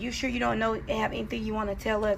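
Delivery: normal talking voice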